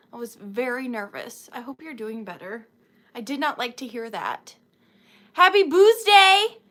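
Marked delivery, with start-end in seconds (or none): 5.3-6.4 very loud, high-pitched shout. Speaker calls out a greeting to the person addressed, loud. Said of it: "That was so loud".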